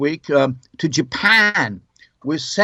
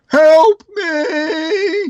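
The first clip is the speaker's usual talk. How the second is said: mock very high, shouted cry; 13 semitones higher, 4 dB louder than usual. Describing Cub Scouts shouting from windows at visitors, imitating a shout for help. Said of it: "they would shout out".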